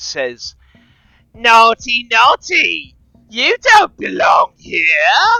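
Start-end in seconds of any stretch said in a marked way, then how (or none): 1.3-5.4 very high, very loud, shrill near-shriek. Narrator voicing a speaker deeper in the chamber, shrill, nearly shrieking voice. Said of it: "a shrill, nearly shrieking voice".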